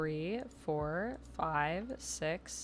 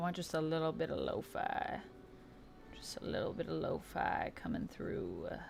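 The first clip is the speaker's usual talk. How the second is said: acted regal queen voice, softer; 4 dB quieter than usual. Checking the music volume with listeners, in her Queen Mara voice. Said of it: "I don't know why I'm doing this voice".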